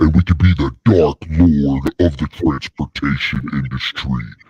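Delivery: very low, deep, rumbling, booming voice. Showing how the voice can be changed, going real low. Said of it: "We can go real low like this".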